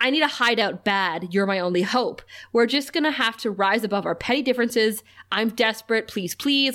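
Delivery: ordinary talk, nothing marked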